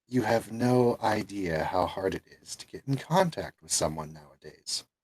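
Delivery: very low, muted, hushed voice. Storyteller voices a figure speaking from a shadowed corner, very low tone. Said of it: "very low tone from one of the shadowed corners".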